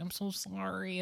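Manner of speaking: put-on weaselly voice. Pitching a bit for the other speaker's set, acting out a shrinking apology: mock-weaselly stage apology. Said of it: "Sort of like a weaselly".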